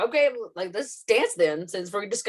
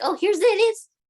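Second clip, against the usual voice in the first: put-on high-pitched little old lady voice; 12 semitones higher, 5 dB louder than usual. Describing the trope of a family member bringing it in, little old lady voice. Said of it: "some kind of like little old lady".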